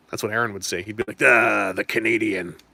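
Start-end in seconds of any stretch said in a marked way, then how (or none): 1.2-2.4 dulcet, signature-style voice. Imagining what Aaron would say about the Canadian, in an Aaron voice. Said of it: "In that in that trademark Aaron voice".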